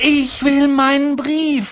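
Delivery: very high-pitched outcry, calling out. After a letter is stuffed back into its envelope, a character demands it, calling out. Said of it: "rief er".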